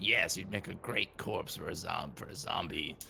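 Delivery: grumbling, half-heard, muttered under the breath. Voicing a character's aside during a group scene: muttered under breath. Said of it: "Magnus like mutters under his breath".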